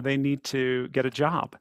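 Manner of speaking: slow, sarcastic, mocking, dismissive tone. Retelling what the business community said about contemplatives: imitating a sarcastic remark. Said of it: "they would say in a very kind of, uh, sarcastic way".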